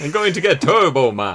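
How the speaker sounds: put-on loud, swooping action-star voice in a Louth accent. Mocking another speaker's retelling of a film: Arnold Schwarzenegger from Louth. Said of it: "sounded like Arnold Schwarzenegger was from Louth".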